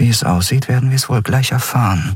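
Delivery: quiet murmured delivery. Narrator reads a character's line in a prison scene, murmuring. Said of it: "murmelte sie".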